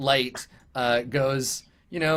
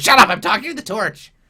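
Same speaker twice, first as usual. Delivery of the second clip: squawky, high, loud cartoon goblin voice; 7 semitones higher, 8 dB louder than usual. Voicing a goblin turning on another goblin: goblin voice. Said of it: "he turns around, he's like".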